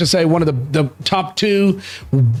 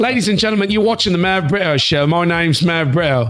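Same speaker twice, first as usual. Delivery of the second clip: attempted, put-on British accent. Friends challenge each other to do accents; he goes first with a British accent. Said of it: "I'll talk with a British accent".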